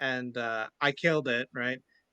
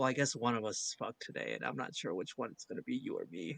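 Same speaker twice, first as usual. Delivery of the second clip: soft, hushed in-character whisper; 8 dB quieter than usual. Leaning in to whisper a threat to a character: whispering in character. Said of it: "it looks like I'm gonna whisper to him".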